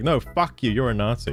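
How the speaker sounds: imitated angry, hostile delivery. Retelling how the other guy replied to a nuanced argument: imitating the other guy's angry retort. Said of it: "and he's like".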